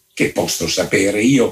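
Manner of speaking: muttering, mumbling quietly under the breath. A visitor rereading a sentence he misunderstood, muttering to himself. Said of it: "borbottava fra sé".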